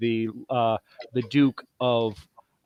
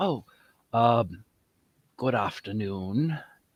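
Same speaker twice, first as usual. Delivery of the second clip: slimy character voice, quieter; 3 dB quieter than usual. Narrator voicing a well-connected man greeting the turtles in a tavern: slimy character voice. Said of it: "a rather um, slimy character".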